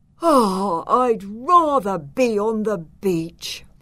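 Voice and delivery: slow, half-asleep, sleepy sighing. A boy on his first day at a new school, sighing half asleep. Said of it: "sighed Nesta, still half asleep".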